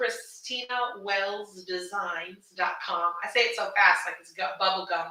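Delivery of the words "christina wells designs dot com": very slow, soft, careful, deliberate, word by word. Repeating her shop's web address for viewers, slow and deliberate. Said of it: "Let me slow down and say it".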